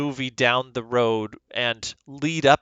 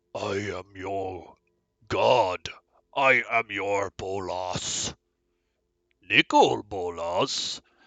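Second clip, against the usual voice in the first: very slow dragon voice, each word drawn out; 4 semitones lower than usual. Talking about a creature card, the speaker slips into a Nicol Bolas dragon voice. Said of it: "He's got a dragon voice".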